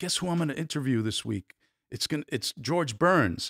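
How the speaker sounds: put-on eager, thrilled reporter voice, bursting with excitement. Retelling a reporter's news about an upcoming interview: imitating an excited reporter. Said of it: "she was very excited".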